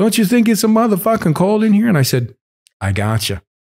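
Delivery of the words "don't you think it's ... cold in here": put-on Italian accent, very high pitched. Retelling what an old man next to you said, imitating an italian accent. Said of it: "he's got an Italian accent".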